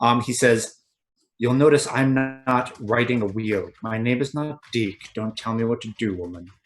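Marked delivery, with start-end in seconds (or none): 1.4-6.4 very quiet, hushed, very soft, under the breath. Voicing a character who answers quietly before the squires notice: speaking very quietly. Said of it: "he just says very quiet".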